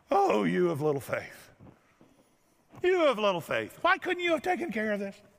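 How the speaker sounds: cranky, irritable, grumpy voice with swooping pitch. Retelling a Gospel scene to listeners, doing a mock-grumpy Jesus voice. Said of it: "This is grumpy Jesus".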